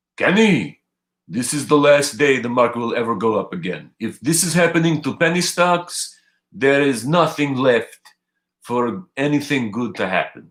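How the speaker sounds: put-on accent coming out Russian-sounding. Retelling what his respected mentor told him about a stock, mentor impression, Russian-sounding accent. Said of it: "Even though that sounded Russian".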